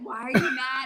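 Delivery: normal talking voice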